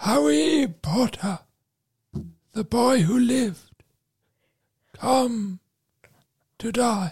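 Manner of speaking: high-pitched, haunting, menacing voice. After offering his Voldemort impression, [name] performs it: Voldemort impression. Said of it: "like to hear my Voldemort impression".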